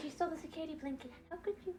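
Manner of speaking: high, whimpering, sob-filled, weepy pet voice. Voicing the crying pet's thoughts about the stolen blanket: voicing crying Buddy. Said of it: "He's like".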